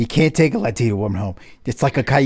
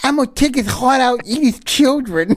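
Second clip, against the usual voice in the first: very high-pitched, explosive, erupting outburst; 11 semitones higher than usual. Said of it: "went from zero to nine hundred".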